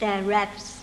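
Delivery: ordinary delivery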